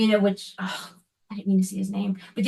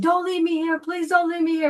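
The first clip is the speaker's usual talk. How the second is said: mock high screaming, pleading cry; 7 semitones higher than usual. Retelling a vision, screaming at a light not to leave. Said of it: "So I immediately started screaming".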